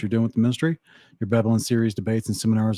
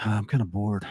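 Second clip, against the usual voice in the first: quiet muttered aside under the breath; 5 dB quieter than usual. Imagining the first man's reaction after naming the animals: Adam muttering under his breath. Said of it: "under his breath was like".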